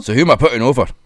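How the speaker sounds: offhand, plain, matter-of-fact, already-knowing tone. Retelling how Drew McIntyre walks into the creative meeting: imitating Drew McIntyre. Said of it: "just walks in and goes".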